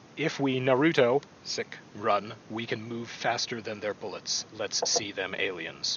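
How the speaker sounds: dead serious, flat, straight-faced deadpan delivery. Reading a quoted Facebook post aloud, in a straight, deadpan reading. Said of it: "when I read it with a straight voice".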